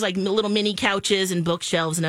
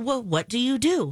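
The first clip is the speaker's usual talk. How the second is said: plain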